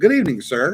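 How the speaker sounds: polished put-on Australian accent. Retelling how a restaurant hostess answered: imitating a perfect Australian accent. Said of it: "the most perfect Australian accent".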